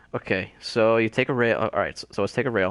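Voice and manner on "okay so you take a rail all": plain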